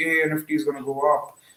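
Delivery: normal talking voice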